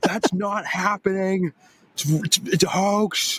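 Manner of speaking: very high, furious, ranting angry scream. Acting out a political response for the co-hosts, in a mock-angry voice. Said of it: "I like your angry voice".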